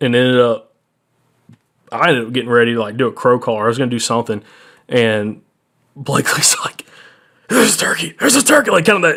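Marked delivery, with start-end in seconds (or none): 7.5-8.7 shouted whisper, pitched very high. Retelling a turkey hunt, quoting Blakely spotting a turkey, imitating Blakely's whisper-yell. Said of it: "Whisper yelling".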